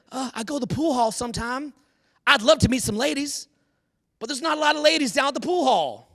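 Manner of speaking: put-on classic Southern accent, Texas-Tennessee style. Retelling a man's answer about meeting women, in a Texas-Tennessee Southern accent. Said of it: "Talks like a classic, like Texas, Tennessee".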